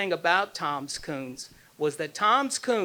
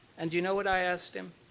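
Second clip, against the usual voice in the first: ordinary talk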